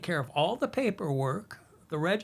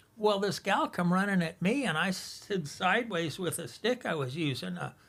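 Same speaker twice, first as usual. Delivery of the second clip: plain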